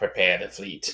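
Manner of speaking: small, crazed villain voice. Retelling a villain's line from an imagined end-credit scene: imitating a crazy little voice. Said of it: "in his crazy little voice".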